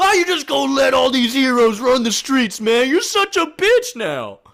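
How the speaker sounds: very high, very loud, shrill ranting yell. Retelling how a man yelled at his boss, retelling a yell. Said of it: "he starts yelling at his boss".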